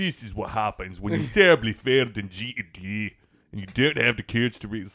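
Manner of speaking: put-on Scottish accent. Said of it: "Somebody went to Scottish".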